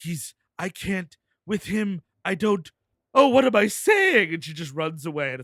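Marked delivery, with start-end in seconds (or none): 0.0-4.3 mock, very slow, high crying in broken-off fragments. Retelling a movie scene, imitating Miranda Otto crying. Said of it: "Miranda Otto is, like, cryptically crying".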